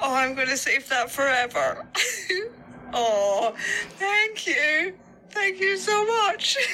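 very high voice, crying through the words. Thanking someone after being moved to tears, tearful voice. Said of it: "I can hear literal tears".

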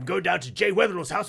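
put-on posh English accent. Retelling a comedian's bit: imitating Stu Dolman's posh English bit. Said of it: "he's like a toffee top hat wearing English".

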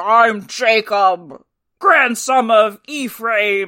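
deep very slow wolf voice. Showing how the movie wolves sound when they telepath-talk: slightly pitched-down wolf voice. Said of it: "So they all talk like this".

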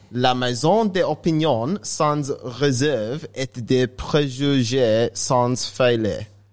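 heavy, exaggerated put-on French accent, very slow. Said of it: "He just accented that up".

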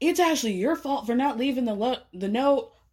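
play-acted yelling tone, mild and kept small. Retelling how Phil answered when told he had to go, retelling a yell. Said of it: "he's like yelling".

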